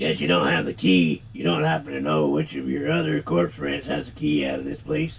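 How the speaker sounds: deep, gritty, rough-edged, rasping character voice. The Nameless One asks a corpse which corpse has the key: deep Nameless One voice. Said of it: "Who is the nameless one really? / See, he does have a deep voice".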